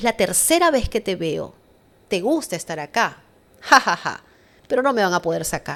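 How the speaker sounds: loud, taunting demon voice. Retelling what a demon said during a possession: imitating a demon speaking. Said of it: "me mira y me dice".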